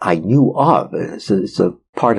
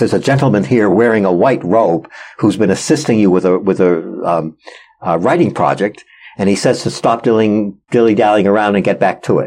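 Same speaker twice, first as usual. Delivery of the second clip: ordinary talk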